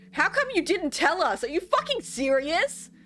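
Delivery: very high, shrill, raging, furious yell. Voicing a character storming out of a room: shouting in anger. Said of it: "still, like, shouting".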